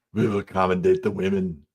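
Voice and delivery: put-on Austrian accent voice. Doing a requested impression in an Austrian German accent: Arnold voice. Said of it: "Arnold voice".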